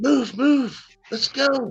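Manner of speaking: very high, urgent shouting from far off. Game master voicing unseen people the players hear, faint distant shouts. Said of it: "You can hear faint shouts of like".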